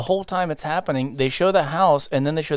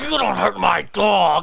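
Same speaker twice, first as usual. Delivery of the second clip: weird put-on voice, dragged out very slow; 4 semitones higher than usual. Retelling what a man said about his dog, in a weird voice. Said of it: "He's doing the weird voice".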